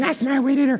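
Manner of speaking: put-on screaming, pitched very high. Telling how people were making off with the weed eater, retelling a scream. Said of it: "So I'm screaming".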